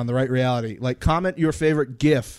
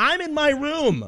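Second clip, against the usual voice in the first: mock shrill, very high, slow, drawn-out screaming; 13 semitones higher than usual. Retelling a fight where someone kept yelling: imitating someone screaming. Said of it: "he kept screaming".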